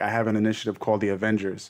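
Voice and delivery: ordinary talk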